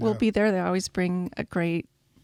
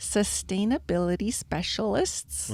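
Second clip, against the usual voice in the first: slow, deliberate, unhurried, careful enunciation; 7 dB quieter than usual. Listing Earth Day event guests, the speaker says it slowly. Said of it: "I'm going to say it slowly".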